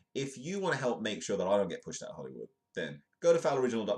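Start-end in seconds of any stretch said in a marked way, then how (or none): 2.7-4.0 loud, high-pitched sales pitch voice. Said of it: "this is my normal shilling".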